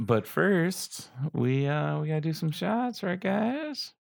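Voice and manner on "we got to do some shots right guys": pitch climbing steeply, ending very high. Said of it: "your voice got really high".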